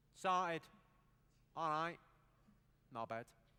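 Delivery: Mancunian accent, plain conversational speech. Addressing the crowd, showing the three words you need: manchester accent. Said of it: "the accent's pretty easy for Manchester".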